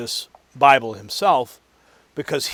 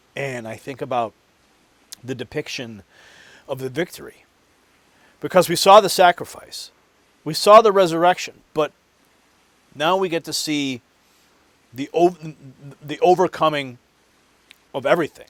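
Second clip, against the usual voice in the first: choked-up, emotional voice catching; 2 semitones higher than usual. Describing a coming film's depiction of the victory, choked up with emotion. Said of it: "I'm getting all choked up about it".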